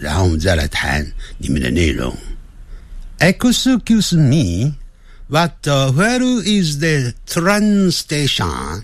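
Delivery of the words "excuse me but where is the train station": faint Japanese accent, pitched very high. Speaker tries reading an English question aloud, with a slightly Japanese-sounding accent. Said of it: "刚才念的有点像日本人的声音".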